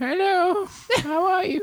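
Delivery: put-on very high-pitched old crone voice. In a scene where a player is asked to be a hag, greet in an old hag voice. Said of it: "Be a hag, please".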